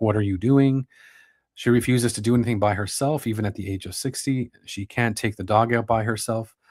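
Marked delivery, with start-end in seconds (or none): 0.0-0.9 imitated condescending tone. Reading out how a mother questions her daughter: imitating a condescending tone. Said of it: "in a condescending tone".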